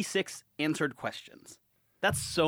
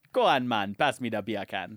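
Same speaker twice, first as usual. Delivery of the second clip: fake Jamaican accent, lower pitch; 6 semitones lower than usual. Joking about words sounding alike in an accent: put-on jamaican accent. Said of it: "with a Jamaican accent".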